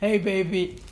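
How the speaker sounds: mock girl voice with masculine sound. Telling how a girl they phoned answered, imitating a girl with a man's voice. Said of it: "the girl's voice sounded like a man".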